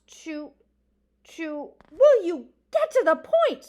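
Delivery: very loud, shrill, fed-up, exasperated screech. A character interrupts another reading a petition aloud; exasperated screech. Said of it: "Mister Oakcock screeched in exasperation".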